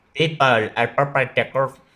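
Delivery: put-on Indian accent. Commenting on a video being watched: put-on Indian accent. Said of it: "I did an Indian accent".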